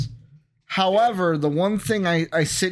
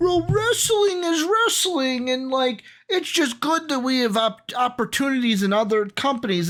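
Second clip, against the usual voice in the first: very high, put-on mocking voice; 9 semitones higher than usual. Speaker imitates people who talk about rival wrestling companies, in a mocking voice. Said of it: "I use my mocking voice".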